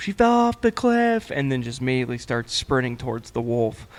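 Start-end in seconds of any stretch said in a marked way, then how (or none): 0.0-1.3 put-on kid's yell as loud as possible, very high, excited. Retelling what the kid yelled after the shot: retelling a kid's loud yell. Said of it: "the kid yells as loud as he can".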